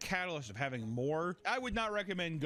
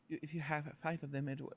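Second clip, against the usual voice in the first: whispering, quieter; 4 dB quieter than usual. Retelling trying to order four cookies: imitating someone whispering. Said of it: "she was, like, whispering".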